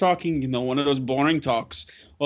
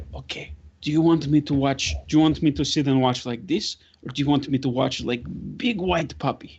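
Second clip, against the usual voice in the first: very quiet, soft voice. Grudek leans over to Emma and asks her, speaking very quietly. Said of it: "Grudek will lean over and he'll say very quietly".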